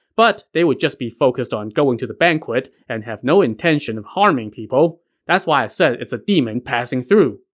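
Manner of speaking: plain reading voice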